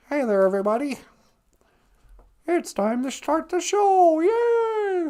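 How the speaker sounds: very high squeaky puppet voice, "yay" stretched. Imagining a replacement Kermit performer doing the voice, failed Kermit the Frog impression. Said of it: "that's more mister Bill".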